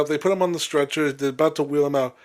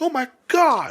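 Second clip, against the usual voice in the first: play-acted very high, screaming cry; 10 semitones higher than usual. Retelling the crowd's reaction as a wrestler falls: imitating women screaming. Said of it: "you hear the women just, like, scream".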